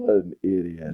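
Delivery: put-on low mutter. Retelling a favorite episode moment, imitating Phyllis muttering under her breath. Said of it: "totally under her breath".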